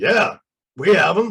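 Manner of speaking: rough-edged, gruff voice. Retelling a phone call to a store, the man answering: gruff voice. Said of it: "this gruff voice goes".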